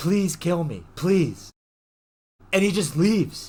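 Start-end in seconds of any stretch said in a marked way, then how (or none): 0.0-1.5 pleading, imploring, begging voice. Retelling a movie scene where a character begs: imitating someone begging. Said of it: "she's begging as he's leaving".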